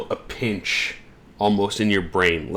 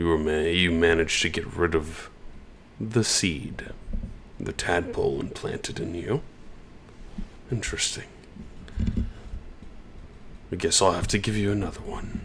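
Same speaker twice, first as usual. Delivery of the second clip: soft, hushed, quick voice; 3 semitones lower, 6 dB quieter than usual. A storyteller voices a telepathic sending from someone long untold, in Aquarius voice. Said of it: "you were using the same voice that Aquarius would have".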